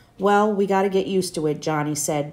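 plain reading voice

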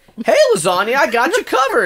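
very high, animated, swooping sing-song voice. Acting out a movie scene, John reassures Lasagna: John voice. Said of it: "But then John is like".

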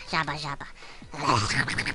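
silly nonsense animal-noise gibberish. Playing a maddening game and getting frustrated, making animal voices. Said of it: "I'm making animal voices".

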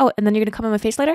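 said really quickly. Retelling a line slipped in to Avi mid-conversation: saying it really quickly. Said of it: "really quickly, I'll be like".

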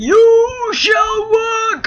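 very high wizard voice, drawn-out "you". Trying to make a portal work, doing a Gandalf impression. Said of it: "This is my Gandalf impression".

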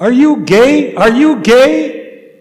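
very loud, high, drawn-out yell. Recalling arriving at a new diocese, when someone in the crowd yelled at him: retelling a yell. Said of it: "Somebody yelled at me of that crowd".

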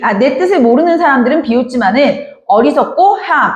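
plain

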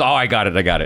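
ordinary delivery

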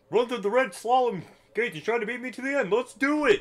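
put-on cartoon dragon character voice. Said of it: "You sound like Doofy the Dragon".

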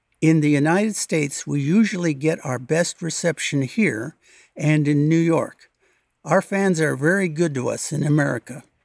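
ordinary talk, nothing marked

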